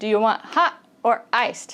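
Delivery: hot and iced emphasized.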